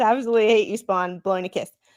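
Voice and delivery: ordinary talk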